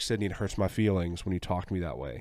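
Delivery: normal talking voice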